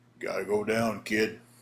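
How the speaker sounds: bottomed-out, super deep, low bass voice. Retelling a match, the speaker quotes what Nelson told him: imitating Nelson's super deep voice. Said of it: "in that super deep voice Nelson had".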